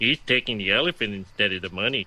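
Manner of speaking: very low, dry, flat deadpan read. On a game show after a contestant makes his choice, deadpan. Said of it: "just deadpan read".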